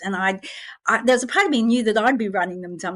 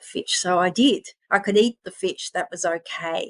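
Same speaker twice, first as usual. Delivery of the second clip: normal talking voice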